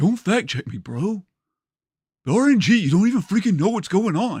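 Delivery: snide, high-pitched, heavily sarcastic tone. Repeating own earlier line as described: sarcastic Napoleon Dynamite voice. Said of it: "in his sarcastic voice".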